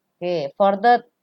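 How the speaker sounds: ordinary delivery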